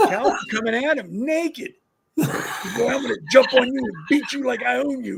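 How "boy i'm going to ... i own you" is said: mock crazed, held-in half-scream. Retelling what a man screamed at a college guy, retelling a scream. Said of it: "He's screaming".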